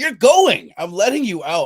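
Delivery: exasperated pleading.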